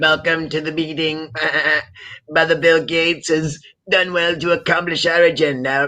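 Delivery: high talking-goat voice. Acting out the talking goat bit the other speaker described: Lucifer talking goat voice. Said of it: "talking as, like, Lucifer".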